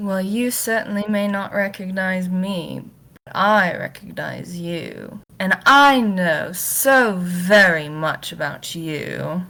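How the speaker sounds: smug, gloating, knowing, self-satisfied delivery. Voicing a character who crouches beside another and speaks to him: smug. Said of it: "this smug ass look on his face".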